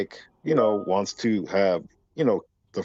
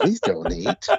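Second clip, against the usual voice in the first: put-on sultry female voice, higher; 9 semitones higher than usual. Joking about replacing the show's announcer: imitating an attractive woman's voice. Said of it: "an attractive woman's voice".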